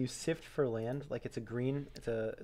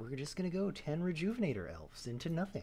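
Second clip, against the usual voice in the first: weird, calm, hushed librarian voice, quieter; 3 semitones higher, 5 dB quieter than usual. Joking about taking over a friend's stream: weird calm librarian voice. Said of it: "that weird, calm librarian voice".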